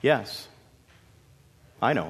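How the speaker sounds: calm, serene, peaceful voice. Narrator reading the sheep's reply to a snarling wolf, calm, at peace. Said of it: "the sheep looked at him so calmly. At peace".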